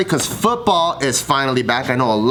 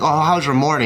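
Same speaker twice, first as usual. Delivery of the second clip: ordinary talk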